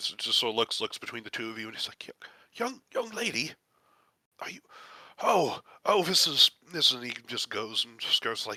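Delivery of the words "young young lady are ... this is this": flustered, overwhelmed, high-pitched stammer tripping over words. A character who just stumbled looks between the two listeners: overwhelmed. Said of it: "he's overwhelmed".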